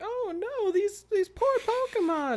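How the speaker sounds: sweet voice pitched way up high. Imagining Greninja bringing hurt Pokemon to the Pokemon Center, in a Nurse Joy voice. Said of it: "That's a good Nurse Joy voice".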